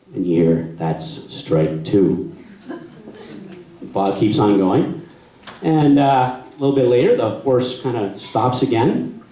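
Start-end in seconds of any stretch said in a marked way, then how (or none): 0.2-2.4 very low, deep count voice. Retelling a story, quoting someone's warning, in a low voice. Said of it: "say in a low voice".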